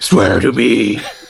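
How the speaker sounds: rough, creaky superhero voice. Answering praise of his Batman voice, in a Batman voice. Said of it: "Batman voice".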